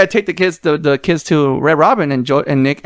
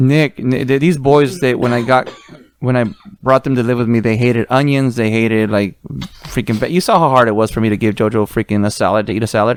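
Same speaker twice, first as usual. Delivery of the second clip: ordinary talk, nothing marked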